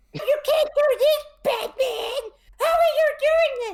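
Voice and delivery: very high, loud, whiny villain voice. Complaining about a batman villain's build-up, imitating a whiny villain. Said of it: "Everything is whiny".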